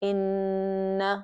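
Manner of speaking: nasal sound held for two beats. Teaching a reading rule, demonstrating holding the nasal sound for two counts. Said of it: "hold it for two beats or two counts".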